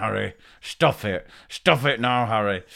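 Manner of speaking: private, slow, muttered and grumbled scolding tone. Speaker recalling telling Harry to stop while smiling, retelling a mutter under breath. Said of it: "under my breath going".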